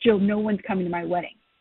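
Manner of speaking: mock weepy, upset, tearful crying voice. Retelling what the bride said on the phone, imitating someone crying. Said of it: "she's crying already and says".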